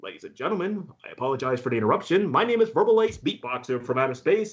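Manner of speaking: subway train PA announcer delivery. Retelling starting a train performance: imitating subway train announcement voice. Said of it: "I would come in with that same voice".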